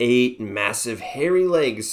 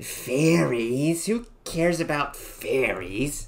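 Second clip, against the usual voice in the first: hissing spider voice; 4 semitones higher than usual. Reading a fairy tale aloud, the narrator voices the spider's reply to the narrator: hissing. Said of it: "She hissed".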